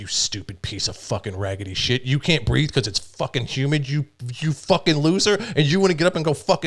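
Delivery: acted, seething, furious rant with rising pitch. Retelling lying in bed tearing into oneself: imitating screaming at oneself. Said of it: "and I'm screaming at myself".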